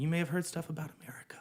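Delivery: hushed, soft, unvoiced whisper.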